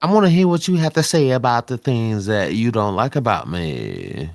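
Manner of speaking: swooping sing-song voice, me stretched out. Doing an impression of another player's voice: Jalen impression. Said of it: "was that a Jalen impression".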